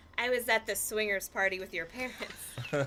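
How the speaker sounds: plain reading voice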